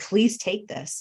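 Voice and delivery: put-on screaming. Recounting being alone at home in an emotional moment, retelling a scream. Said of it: "just screaming".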